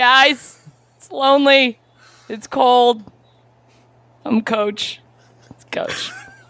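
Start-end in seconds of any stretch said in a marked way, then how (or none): 0.0-5.0 in-character full-out screaming, high and loud. Playing a character alone in the quiet, calling for the guys: screaming in character. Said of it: "And I just start screaming".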